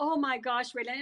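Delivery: normal talking voice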